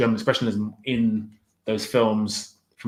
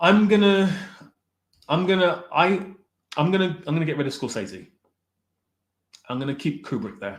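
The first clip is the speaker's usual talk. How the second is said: pitched-up voice cracking and breaking; 7 semitones higher than usual. Speaker making a painful choice between two directors; voice breaking. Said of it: "I can hear my voice breaking".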